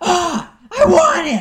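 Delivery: shrill, booming, long, eager, drawn-out yell. Narrating a scene, voicing a character who leaps at a rat, shouting. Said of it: "and shouts".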